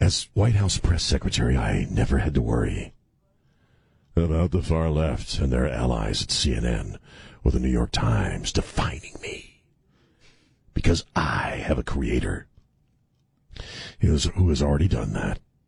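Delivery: very low, put-on sexy, seductive voice. Reading aloud a candidate's campaign statement, the speaker uses a put-on sexy voice. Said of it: "I'm reading it in like a sexy voice".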